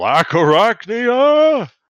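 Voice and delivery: booming, high, echoing call, loud and ringing. Describing a show's scene, the speaker calls out as Megatron, voice echoing. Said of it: "You would just hear Megatron's voice echo".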